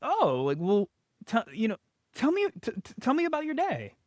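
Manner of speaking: curious, inquisitive, rising upward inflection. Demonstrating how a parent gets their kids to open up: curious, upward inflection. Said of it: "more of an upward inflection".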